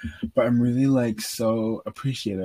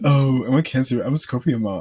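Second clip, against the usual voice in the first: mocking put-on girl voice, louder; 5 dB louder than usual. Retelling how a girl made fun of her: mocking imitation of a girl. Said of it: "this girl is just, like, making fun of me".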